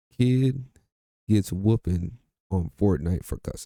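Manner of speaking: normal talking voice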